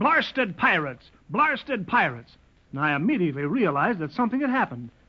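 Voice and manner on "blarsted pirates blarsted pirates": squawking parrot-like bird cry, said twice. Reporting to sir how the parrot came back to camp: squawking like Paul Parrot.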